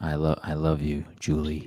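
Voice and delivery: flat, low monotone. Mocking an actor's line delivery in a movie: monotone Prinze Jr. impression. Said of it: "everything is so monotone".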